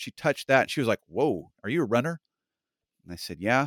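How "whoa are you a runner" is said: put-on judgmental, sizing-up tone. Speaker retells what a woman asked after touching their muscle; mock-judgmental tone. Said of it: "she was kind of give this very, in my opinion, judgmental tone".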